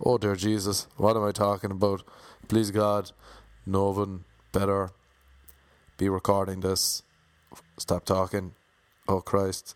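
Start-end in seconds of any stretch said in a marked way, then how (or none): none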